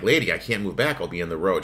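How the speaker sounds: ordinary talk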